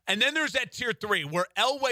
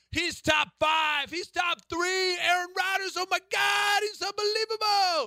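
very high, cranked-up fake sports host voice; 10 semitones higher than usual. Quote someone's praise of Aaron Rodgers in a fake Colin Cowherd voice. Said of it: "in my fake Colin Coward voice".

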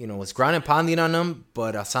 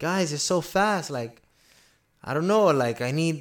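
put-on Brazilian accent, pitched up; 6 semitones higher than usual. Retelling a fighter's awkward post-fight interview: imitating Johnny Walker's Brazilian accent. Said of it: "So he has his accent".

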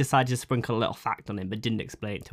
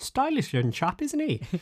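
put-on squeaky elderly woman's voice; 14 semitones higher than usual. Picturing an old woman remarking to her husband as the listener walks away; old woman voice. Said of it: "this old woman turned to her husband going".

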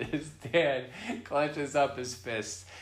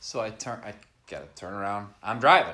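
ordinary delivery

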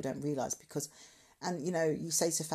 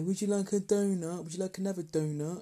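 belittling, mocking, condescending tone; 4 semitones higher, 4 dB louder than usual. Retelling a man offering someone another donut to belittle them: mock-belittling voice. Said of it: "it's that type of voice, like, you know, to make you feel, or to belittle you".

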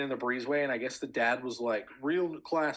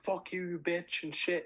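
mock hostile swearing, pitched high, not full volume; 6 semitones higher than usual. Telling how people cursed out an old lady on a breezeway, retelling someone yelling curses. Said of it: "fucking yelling at the old lady".

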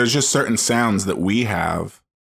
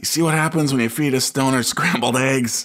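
ranting delivery with raised pitch; 5 semitones higher than usual. Retelling a censored movie clip, imitating John Goodman ranting.

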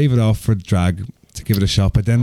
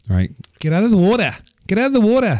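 put-on Australian accent, pitched very high; 10 semitones higher than usual. Asked to prove a claim about accents, a speaker does an australian accent. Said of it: "I can do a great Australian accent".

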